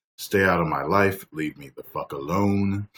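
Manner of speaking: ordinary talk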